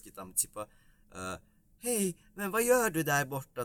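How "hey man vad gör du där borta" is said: very high, friendly Swedish character voice. Imitating a comedian playing the same character as a Swede: imitating a Swedish character. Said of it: "И тот же персонаж уже шведский".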